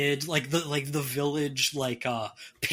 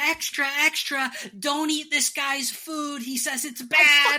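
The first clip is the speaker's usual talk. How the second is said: put-on very high child voice yelling out; 12 semitones higher, 4 dB louder than usual. Voicing a little kid who shouts into the village: kid shouting. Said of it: "he shouts into the village".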